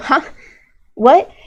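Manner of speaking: startled, high, just-woken blurt. Describing a favorite Chinese voice line, imitating Xiao waking up. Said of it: "Xiao like wake up and go".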